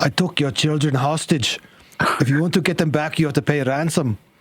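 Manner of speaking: put-on near-Scottish accent slipping in. Voicing a friend in a made-up hostage story, Andy in a Scottish accent. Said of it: "This is now a Scottish accent though".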